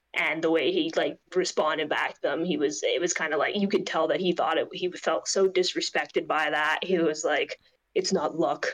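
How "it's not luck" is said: dead serious, very serious tone. Retelling a press conference answer: imitating Ryan Blaney, dead serious. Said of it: "his tone of voice was just, like, dead serious".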